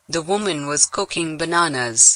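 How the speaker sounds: Indian-accented voice. A text-to-speech demo reads the sample sentence aloud: Indian-accented voice. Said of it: "we had the Indian uh, voice read that for us".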